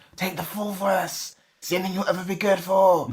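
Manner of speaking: imitated whisper. Retelling a comic scene where the father speaks at the trial: imitating someone whispering. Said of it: "whispering to his ear".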